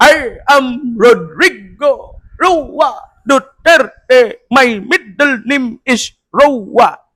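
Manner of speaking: put-on stammering, halting speech. Retelling the ICC arrest, imitating Duterte stammering. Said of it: "ba't bigla ka na utal-utal doon?".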